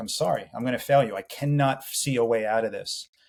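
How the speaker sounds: tearful, crying stage half-whisper. Retelling a late-night apology to his sleeping wife: imitating a tearful half-whisper. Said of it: "tearing up and just whispering".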